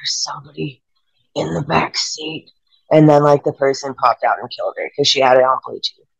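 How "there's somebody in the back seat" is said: put-on gasping dying man's last breath, quieter. Retelling an urban legend, a crashed driver warning her: imitating a dying man's last breath. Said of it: "with his dying breath".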